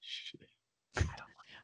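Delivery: drawn-out, slow, very hushed whisper. Teasing another speaker by echoing a whispered confession: imitating someone whispering. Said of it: "I like you have to whisper that. You're like".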